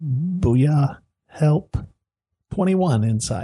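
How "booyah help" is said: easy, gentle, mild delivery. Voicing a character in a game who walks up to another, in a soft voice. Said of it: "in a really just soft voice".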